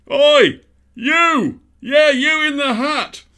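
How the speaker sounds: very high, loud bellow through a megaphone. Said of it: "bellowing at him through his own megaphone".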